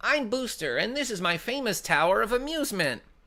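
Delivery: put-on cartoon villain voice. Reading a game character's lines in a Mandark voice. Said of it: "I can do Mandark, though".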